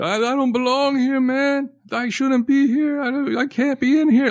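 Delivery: mock sobbing, bawling cry, pitched very high. Retelling a jailed man's pleas about not belonging there: imitating a man crying. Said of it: "Like, crying".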